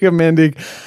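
speaking with a Jamaican accent.

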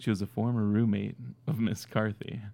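sultry, dramatic, put-on quasi-sexy voice. Doing a dramatic reading of a whole passage, put-on quasi-sexy voice. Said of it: "I'll do the whole thing in my quasi sexy voice".

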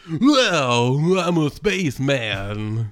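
low, laid-back surfer drawl, well drawn out. Reading ad copy as a spaceman battling aliens, in a surfer bro voice. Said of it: "You're not a surfer bro spaceman".

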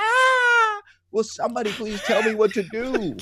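put-on desperate scream. Voicing a confused world begging for guidance: imitating a desperate scream. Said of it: "Can you do that scream one more time".

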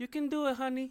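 fake Latin accent, pitched very high. Imagining a mom cheering her son on stage, put-on Latin accent. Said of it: "I don't know how to do a fucking Latin accent".

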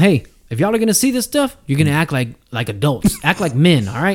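put-on scolding grown-up voice. Retelling how the adults scolded the giggling kids: imitating adults scolding kids. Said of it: "the adults would come".

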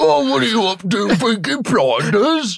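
high-pitched shouting. Describing a Peaky Blinders character who shouts even up close: shouting like a Peaky Blinders character. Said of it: "he's always like shouting".

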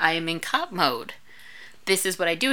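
plain

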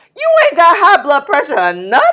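put-on, very loud, swooping voice full of attitude. Retelling how she said it after being asked: imitating her neck-swinging delivery. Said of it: "Whole neck swinging".

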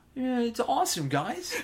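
terrible voice, very high and dragged out slowly. Trying out impressions with the other speaker: terrible Owen Wilson voice. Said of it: "that's a terrible Owen Wilson".

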